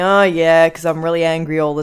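gloomy, downcast delivery. Retelling a movie scene, imitating mopey Bruce Banner. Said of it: "mopey Bruce Banner getting about just going".

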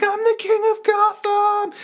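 put-on very high, drawn-out, loud yell. Retelling a scene where the Penguin shouts on a rooftop: imitating the Penguin yelling.

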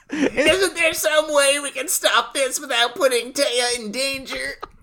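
put-on very high, chain-smoking small child voice. Recapping the episode, voicing Mokuba's plea like a chain-smoking orphan. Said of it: "like a fucking Oliver Twist orphan who's been smoking".

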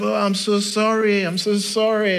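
put-on Mexican-American English accent. Retelling how Theo apologized after finally arriving, in Theo's Mexican-American accent. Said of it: "that's like my best kind of Mexican-American accent".

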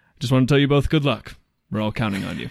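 put-on deadpan delivery. Retelling a film scene during a crash: imitating a deadpan delivery. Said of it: "just deadpan".

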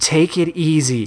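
usual speaking voice

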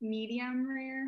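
shy, unsure, timid, hesitant little voice. A guest answers the host's question about steak: timid. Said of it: "Why'd you say it all timid like that?".

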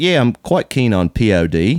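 put-on Australian accent. Retelling what an Australian customer said in a store: imitating an Australian customer. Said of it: "And he goes".

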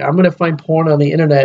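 ordinary talk

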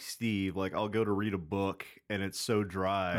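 ordinary delivery

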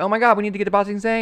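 high, fast frantic exclamation. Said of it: "and then they're like".

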